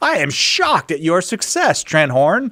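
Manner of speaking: fake surprise. Mocking own earlier remark about a guest's podcast: mock shocked tone. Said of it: "Totally surprised".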